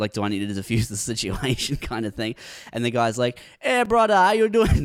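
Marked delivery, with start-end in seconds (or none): 3.6-4.9 put-on heavy Jamaican accent, very high and loud. Retelling how a stranger greeted him; thick Jamaican accent. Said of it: "the thickest Jamaican accent I've ever heard in my life".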